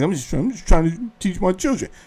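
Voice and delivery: mock toned-down, meek delivery. Mocking someone's changed tone in an argument, mimicking a less aggressive tone. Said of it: "So now your tone is more less aggressive".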